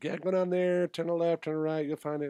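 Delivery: put-on Irish accent, high-pitched and rattled off quickly. Retelling how a guy gave directions to where everyone was, in an Irish accent. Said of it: "in his Irish accent".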